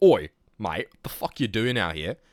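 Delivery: put-on Australian accent, rough police officer voice. Quoting a police officer who arrived, in a put-on Australian accent. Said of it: "Sorry about the Australian accent".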